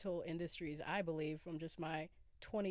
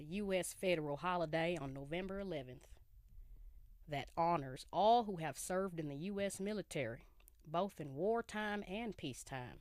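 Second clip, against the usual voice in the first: put-on old-timey Southern accent, drawled. Speaker announces reading a definition aloud, in an old-timey Southern drawl. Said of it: "I'm gonna read it in my old timey Southern voice right now with the drawl".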